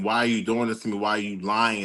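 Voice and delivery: tearful, sobbing, crying voice. Retelling what a crying baby says in a video: imitating someone crying. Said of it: "This baby is crying, saying".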